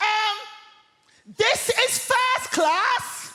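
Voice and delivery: very high, shrill, drawn-out acted shout at full volume. Retelling a seated woman in a first-class carriage, retelling a woman's shout. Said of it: "at the top of her voice, she shouts".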